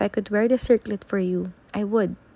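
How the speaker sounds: plain reading voice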